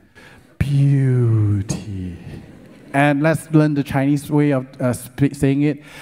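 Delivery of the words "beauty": beautiful, lovely reading delivery. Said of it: "You need to read it beautifully".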